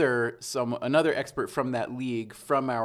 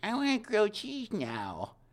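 put-on high, slow little kid voice. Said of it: "I'd like to have someone like".

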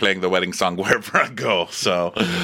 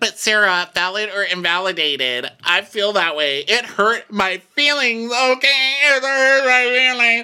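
put-on drunk voice, pitched higher; 13 semitones higher, 3 dB louder than usual. Retelling what a drunk speaker said to Sarah: imitating drunk Brooks. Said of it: "And Brooks is wasted".

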